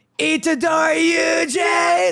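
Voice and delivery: high-pitched, slow, taunting villain shout.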